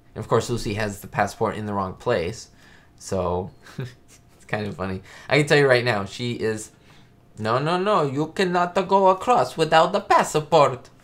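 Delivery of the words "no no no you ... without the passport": loud, high, horrible fake Italian accent. Speaker acting out a man's line from a scene's dialogue, horrible Italian accent. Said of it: "He says with my horrible Italian accent".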